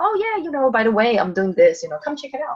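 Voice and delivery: relaxed throwaway delivery. Showing how to mention an invitation to people: relaxed casual. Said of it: "Just mention it, you know, casually".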